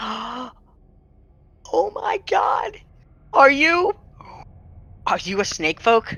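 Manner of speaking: gasping, starstruck excitement. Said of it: "and she goes".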